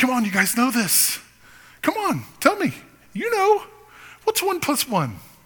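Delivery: very high, swooping, eager, excited coaxing teacher voice. Voicing an elementary school teacher coaxing a class: imitating an excited teacher. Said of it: "like that elementary school teacher that's excited".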